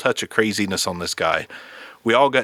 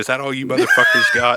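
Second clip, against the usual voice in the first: put-on, laughing, defiant, goading taunting tone; 3 semitones higher, 4 dB louder than usual. Retelling what a man being kicked on the ground said to his attackers: retelling a laughing taunt. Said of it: "Laughing, saying".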